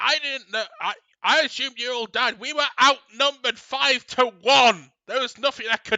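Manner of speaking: angry yelling. Voicing a character who yells back about being captured: yelling back. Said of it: "she just yells back".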